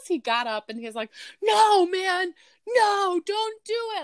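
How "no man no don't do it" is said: mock scream, very high and very slow, drawn-out. Retelling how the brother-in-law reacted to a movie: imitating Mark screaming. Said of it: "he was screaming at the T V".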